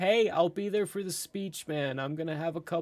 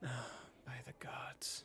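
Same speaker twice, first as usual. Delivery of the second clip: barely voiced, whispered under-the-breath mutter; 4 semitones lower, 17 dB quieter than usual. Voicing a hooded figure muttering near a player: under her breath. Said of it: "you hear her slightly say under her breath".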